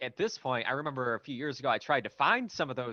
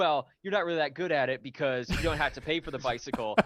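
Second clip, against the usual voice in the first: ordinary talk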